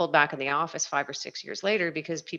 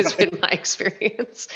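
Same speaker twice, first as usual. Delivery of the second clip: speaking through laughter; 3 semitones higher, 6 dB louder than usual. Sharing an experience of real estate people and the office, laughing.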